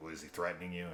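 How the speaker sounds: put-on dismissive voice. Retelling a call where a cop brushes off a threatened woman: imitating a dismissive cop. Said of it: "the cop is, like, totally dismissive".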